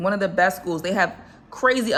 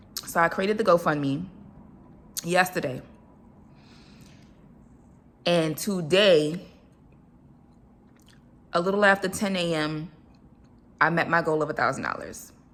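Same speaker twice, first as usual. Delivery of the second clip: voice fighting back tears, on the edge of crying; 4 dB quieter than usual. Telling about the fundraiser right after saying they're about to cry: holding back tears. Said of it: "this is why I'm about to cry".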